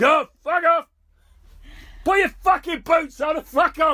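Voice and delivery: very loud, very high, shrill, furious shouting. Describing what Ron shouts at people out walking about: imitating Ron shouting angrily. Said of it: "That's all Ron shouting".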